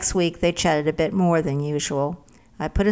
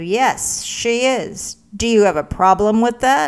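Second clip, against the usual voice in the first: put-on loud, raised, high, outright delivery; 5 semitones higher, 4 dB louder than usual. Retelling how the card-playing men answered a young man, retelling a loud announcement. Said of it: "loudly announced to him".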